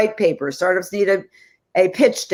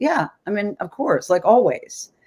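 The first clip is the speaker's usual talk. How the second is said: offhand, casual, unbothered, nonchalant delivery. Retelling your son's answer when you asked if you sound bossy, imitating his nonchalant reply. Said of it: "he was just so nonchalant".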